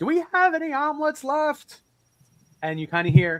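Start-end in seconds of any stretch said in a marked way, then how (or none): 0.0-1.8 very high-pitched shout. Telling a story, the speaker acts out a man leaning back and yelling to the back. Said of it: "leans into the back and yells out".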